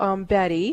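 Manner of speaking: usual speaking voice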